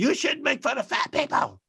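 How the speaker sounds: mock, very high, screechy, angry scolding. Retelling a joke, imitating an offended woman screaming: imitating a woman screaming. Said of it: "screaming at me".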